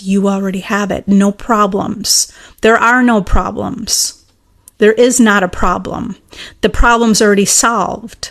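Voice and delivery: ordinary talk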